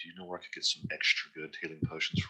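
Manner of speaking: very hushed, leaned-in whisper. Leaning over to another character to ask quietly: whispering in character. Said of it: "I lean over and whisper to Nist".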